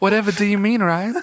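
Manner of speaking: very high, put-on southern belle accent. Playing a southern gal in a Superman bit, southern gal voice. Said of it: "Just a southern gal".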